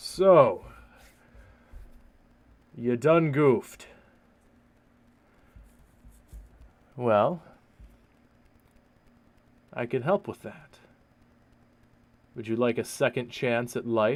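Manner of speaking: loud, booming, echoing voice. Voicing a being that speaks to the listener, in a deep echoing voice. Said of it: "a deep and echoing voice".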